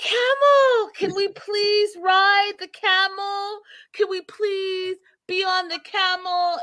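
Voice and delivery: put-on, very high, gushing, excited, giddy pleading. Retelling how a woman reacted when a camel showed up, imitating excited young lady. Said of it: "she's excited like a young lady".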